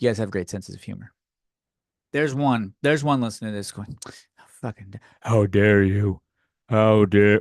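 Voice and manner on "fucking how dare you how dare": very forced, overdone manly voice. Mocking an imagined offended listener, the speaker does an overcompensated male voice. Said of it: "with like the very overcompensated male voice".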